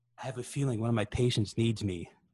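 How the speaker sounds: ordinary talk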